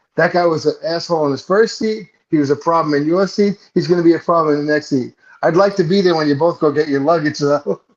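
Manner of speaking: plain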